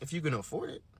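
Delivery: put-on muttered whisper. Retelling a muttered aside in a gift shop: retelling a whisper under breath. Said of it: "I whisper under my breath".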